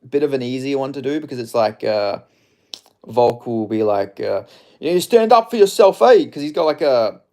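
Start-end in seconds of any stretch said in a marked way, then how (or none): 4.8-6.2 put-on very high, loud Southern European Australian accent. Showing chat an easier impression: Volk impression, wog accent. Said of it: "they call it a wog accent".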